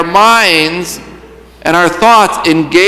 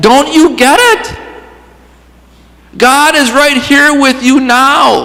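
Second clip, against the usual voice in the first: put-on frustrated voice, higher pitch; 7 semitones higher than usual. Reading out a writer's words to a congregation: imitating a frustrated writer. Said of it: "You can almost hear the frustration in his voice".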